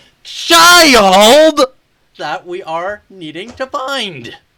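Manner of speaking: put-on very loud, high character-voice shout, "child" stretched long. A player in character calls out to the others, yelling in character. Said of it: "are you yelling it".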